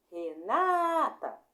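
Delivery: second syllable na of Renata stressed and held. Calling a name to find its strongest syllable: stressed, held na in Renata. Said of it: "Qual foi a sílaba que fiquei mais tempo falando? Não foi a segunda?".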